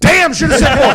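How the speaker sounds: mock regretful outburst, high and loud.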